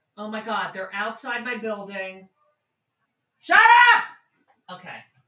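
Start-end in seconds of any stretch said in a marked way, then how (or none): 3.4-4.1 very high, shrill, loud yell. Yelling at noisy people outside the building: yelling out the window. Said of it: "I just yelled, "Shut up."".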